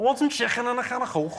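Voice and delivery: put-on high-pitched Liverpool Scouse accent. Showing the key phrase needed to do an accent: Liverpool Scouse accent. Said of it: "trying to do a Liverpool accent".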